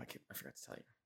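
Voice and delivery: whispered, unvoiced, confiding tone.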